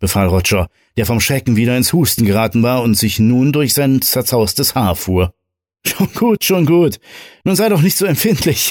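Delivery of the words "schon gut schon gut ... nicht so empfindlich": very high, giggly, chuckling, soothing tone. A man answers his friend's order to shut up: chuckling. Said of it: "Mario gluckste immer noch".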